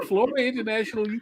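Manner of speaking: high, fast, mock incredulous rant. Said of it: "I was like".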